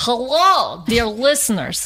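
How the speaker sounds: put-on speaking with Russian accent. Improvising a podcast intro in character, she greets listeners in Zoya's Russian accent. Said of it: "introduce yourself with your Russian accent as [name]".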